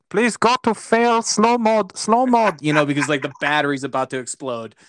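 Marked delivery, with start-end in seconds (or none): 0.1-2.6 very high, slow, drawn-out, raised voice. Retelling an urgent team radio call to the driver: imitating the Ferrari pit wall. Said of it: "the Ferrari pit wall is like".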